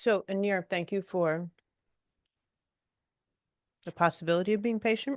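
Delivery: speaking with mouth full. Speaker thanks someone while eating, talking while chewing. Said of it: "So I'm chewing".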